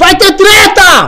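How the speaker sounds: very loud, very high, sensationalist yell. Hyping up the show's next part, shouting sensationally. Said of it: "Tô gritando de forma sensacionalista".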